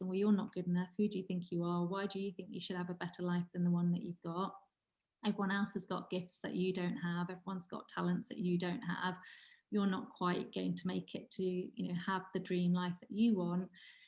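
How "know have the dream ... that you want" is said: normal talking voice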